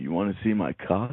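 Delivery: put-on, low, deep voice. Trying out a phrase the others suggested: deep voice. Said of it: "You've got that deep voice".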